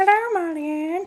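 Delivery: squeaky, way-up high-pitched voice. Greeting someone at the start of a message: high-pitched voice. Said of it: "Obligatory high-pitched voice moment".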